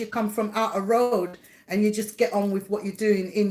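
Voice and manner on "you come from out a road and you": usual speaking voice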